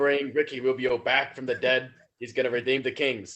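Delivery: loud put-on Brooklyn accent. Chatting about the Kings with friends, the speaker says: put-on Brooklyn accent. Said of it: "Is that your new Brooklyn accent".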